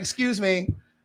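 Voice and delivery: very polite, courteous, nice-as-can-be tone. Retelling asking a server for a pizza slice: imitating own polite request. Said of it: "I was very nice".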